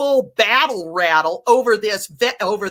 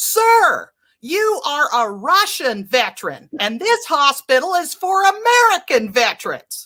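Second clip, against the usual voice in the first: play-acted, pitched-up public announcing call-out; 5 semitones higher than usual. Retelling how a nurse spoke up to a veteran in the line: imitating the nurse speaking loudly. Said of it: "she speaks up really loudly for all the veterans".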